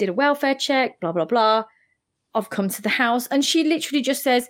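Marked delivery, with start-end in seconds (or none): 0.0-3.3 mock plain, unbothered, calm, matter-of-fact reporting voice. Retelling what a caller said on a nine one one call: imitating a calm caller. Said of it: "she sounded very calm".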